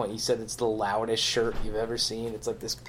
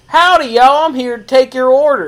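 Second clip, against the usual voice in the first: shrill, very high, very loud put-on cowgirl voice; 14 semitones higher, 18 dB louder than usual. Picturing a cowboy woman taking an order: put-on cowboy woman voice. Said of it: "a cowboy woman".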